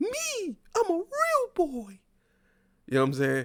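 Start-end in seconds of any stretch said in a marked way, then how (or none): 0.0-2.0 very high cartoon puppet voice. Mocking how some people sound, quoting Pinocchio in a Pinocchio voice. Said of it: "what was it Pin- Pinocchio?".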